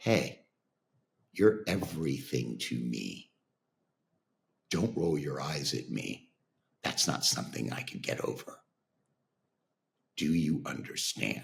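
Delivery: calm, low, quiet, gentle voice. Father retelling what he told his eye-rolling daughter, retelling in a calm voice. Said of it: "in a calm voice and said to her".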